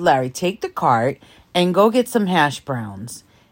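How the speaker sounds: ordinary talk, nothing marked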